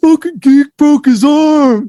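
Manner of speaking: very loud, very high, shrill yell. Retelling how a kid in the hallway yelled at him: imitating someone yelling loudly. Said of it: "he's just, like, so loud".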